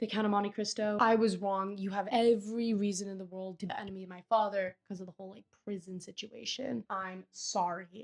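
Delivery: ordinary delivery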